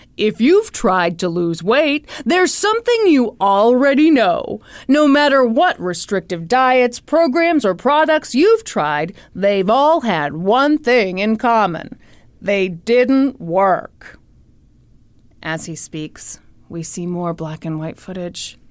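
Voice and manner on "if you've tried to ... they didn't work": classic, iconic TV infomercial announcer voice. Acting out the announcer while a partner describes the footage, in iconic infomercial voice. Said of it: "Now we hear that iconic infomercial voice".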